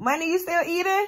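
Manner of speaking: high, loud call projected to carry far.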